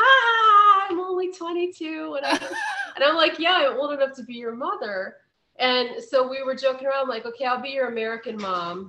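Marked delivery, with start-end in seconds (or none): 0.0-2.2 put-on laugh through words, higher, louder. Retelling a 22-year-old's reply on hearing the speaker's age, imitating laughing while talking. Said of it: "And she starts laughing like".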